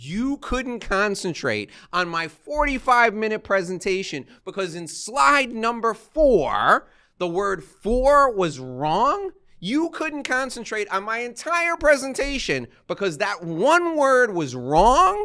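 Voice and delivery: heated ranting outburst. Retelling a reply to a man's critique of a presentation: retelling going off at someone. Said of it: "and then I went off".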